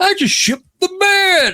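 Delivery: put-on old-timer voice, pitched way up. Quoting the old man in bed from a favorite commercial, in a Cosby-esque old man voice. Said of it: "it almost sounds Cosby-esque".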